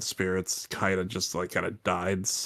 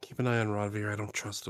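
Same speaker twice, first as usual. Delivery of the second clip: whispered aside, much quieter; 5 dB quieter than usual. A character walking past leans in to him, whispering. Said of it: "just uh whisper to him".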